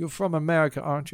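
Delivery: poor put-on Spanish accent impression. Retelling what a woman asked an american man, in a bad spanish accent. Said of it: "I can't do a Spanish accent very well".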